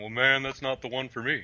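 cartoon-style drawling Texas accent. Voicing someone out there who dislikes the series, sounding like Hank Hill. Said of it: "That sounded like Hank Hill".

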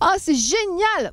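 very high, animated, drawn-out emotional cry. Contrasting plain speech with feeling, the speaker gives an emotional, animated cry. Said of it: "quand on a une émotion, ce qui est différent, c'est".

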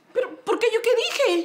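whiny, wounded, high whimpering tone.

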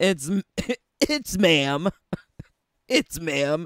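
exaggerated butch voice. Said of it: "In the very butchest voice".

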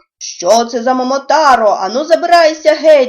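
loud, shouted monster voices. Reading a story aloud, the monsters confront an intruder in their yard, shouted. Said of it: "закричали чудовиська".

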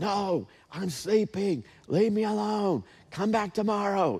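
put-on irritated whisper. Acting out a sleepy friend refusing a midnight knock at the door: acting an annoyed whisper. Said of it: "they're probably whispering back and forth".

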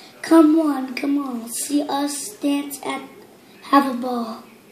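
usual speaking voice

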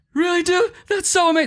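very high, gushing dude voice, pitched way up. Retelling the listener's reply at a chaotic party, in a Logan Paul impression. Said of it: "That's my best Logan Paul impression".

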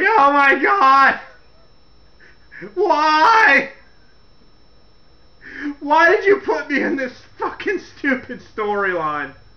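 mock, slow, blubbering crying wail, "why" drawn out. Retelling how Stephanie cried to her dad: imitating someone crying. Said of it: "she's all crying to her dad".

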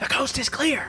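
loud, breathy stage whisper meant to carry. Voicing characters peeking out of a cargo hold: loud whisper. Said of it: "just loudly whisper".

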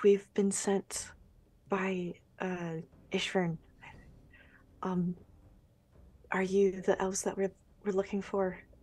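mild, unassuming, low-key, easy tone. Kneeling close to the elves and asking if they are the ones sought: speaking quietly. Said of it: "try and quietly say".

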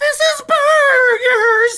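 on the verge of breakdown. Customer complaining that her order is still wrong, on the verge of a breakdown. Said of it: "She sounds like she's about to have a nervous breakdown".

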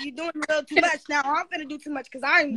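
usual speaking voice

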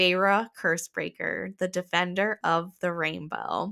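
ordinary delivery

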